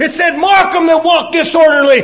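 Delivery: high-pitched, loud, forceful shout.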